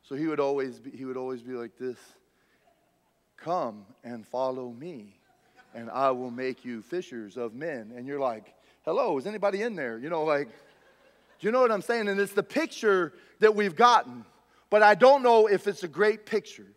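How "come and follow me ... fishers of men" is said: very quiet, very slow, low, drawn-out drawl. Mimicking how Jesus talked in TV shows seen as a kid, slow-talking impression. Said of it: "he always moved really slow and he always talked really slow".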